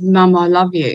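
normal talking voice

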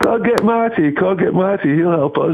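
put-on English accent, very high and very slow. Recalling what she would say when they needed help, in a put-on English accent. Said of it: "with the English accent".

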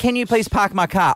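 usual speaking voice

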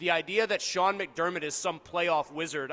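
ordinary delivery

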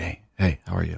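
mock hushed tones of voice. Mimicking wedding guests greeting each other, imitating hushed tones. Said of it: "they're like talking hushed tones".

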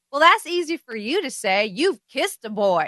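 put-on Southern accent, spunky, teasing and flirty. Imagining the actress in the role, the speaker voices her line imitating a southern accent. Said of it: "She's got a killer Southern accent".

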